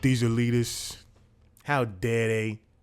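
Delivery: strong New York accent. Talking about the Daily Show on the road, the speaker slips into a New York accent. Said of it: "I went into a New York accent".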